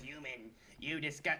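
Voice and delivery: very soft, hushed, oily, smarmy little creature voice. Mocking a game enemy that hides in its hole: imitating a smarmy rat. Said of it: "That fucking smarmy little bastard that hides in his hole and says".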